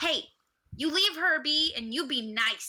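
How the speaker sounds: mean menacing tone. Acting out a character telling drunk sailors to leave a woman alone: meanest scowl, mean warning. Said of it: "I put on my meanest scowl".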